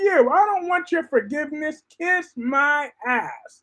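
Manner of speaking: mock defiant, high-pitched, fierce. Imitating Ava rejecting Sonny's forgiveness: imitating Ava in war mode. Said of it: "Ava's like".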